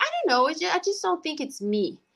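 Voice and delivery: put-on small, hesitant girl's voice.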